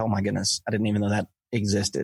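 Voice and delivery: ordinary delivery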